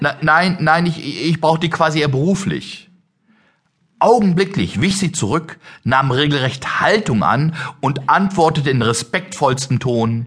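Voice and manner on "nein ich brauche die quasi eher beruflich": put-on stuttering, stammered speech. Caught off guard by a saleswoman's teasing, the narrator retells stammering a reply. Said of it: "brachte ich nur ein Stottern hervor".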